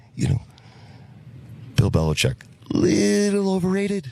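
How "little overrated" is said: very high, slow upper-register falsetto voice. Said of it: "you have to do it in that voice. It's like an upper register".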